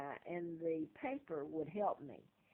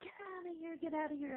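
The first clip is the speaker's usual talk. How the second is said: mock wild crazy-man rant, dismissive brush-off; 10 semitones higher than usual. Retelling how the agent reacted to the story: imitating the agent screaming. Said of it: "he's screaming and yelling".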